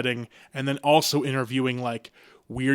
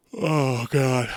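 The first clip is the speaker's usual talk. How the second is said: speaking while yawning. Talking on their own podcast, yawning while talking. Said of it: "sorry, I'm yawning on my own podcast".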